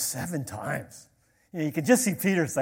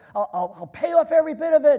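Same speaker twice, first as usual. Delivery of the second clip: mock-pleading, acted out, higher and louder; 12 semitones higher, 7 dB louder than usual. Retelling a parable, voicing a debtor begging the king, imitating a man pleading. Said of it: "And he's pleading with the king".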